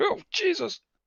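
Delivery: very high, stunned, shocked yelp. A narrator voices him, hit square in the chest and staggering back: stunned yelp. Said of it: "he's clearly stunned and he staggers back like".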